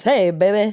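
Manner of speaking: put-on old-timey transatlantic accent. Showing off the old-timey voice with a short greeting: put-on transatlantic accent. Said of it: "Nailed it".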